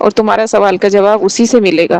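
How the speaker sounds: plain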